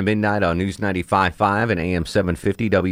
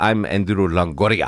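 put-on thick, laid-on, heaviest possible Spanish accent. Retelling how he introduced himself to a guy, heavy spanish accent. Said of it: "in the heaviest Spanish accent I've ever heard him use".

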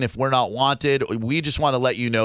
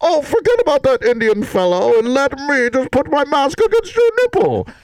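loud, high, booming put-on voice with swooping pitch; 14 semitones higher, 6 dB louder than usual. Offering a caller character voices for phone sex: Bane voice. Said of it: "Maybe like Bane from A Dark Knight Rises".

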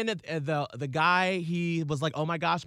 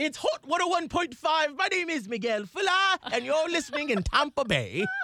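bad put-on British accent, much higher; 9 semitones higher than usual. Comparing accents with friends, the speaker shows their own attempt: a failed british accent. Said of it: "when I try to go".

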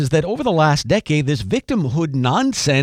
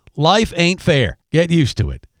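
put-on Southern accent with plain delivery; 6 semitones higher, 3 dB louder than usual. Speaker quotes a coach telling the boys, imitating a southern accent. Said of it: "with that distinctive southern accent".

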